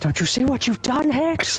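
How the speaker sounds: high, shouted movie villain voice.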